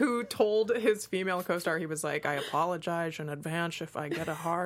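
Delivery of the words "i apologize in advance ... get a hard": bad put-on Scottish-accented voice. Retelling a quote to the others: worst Sean Connery impression. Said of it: "that's the worst Sean Connery impression in the world".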